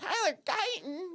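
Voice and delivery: squeaky put-on voice pushed very high. Recalling how she called out a name, retelling in a high-pitched voice. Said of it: "I got my high pitched voice into it".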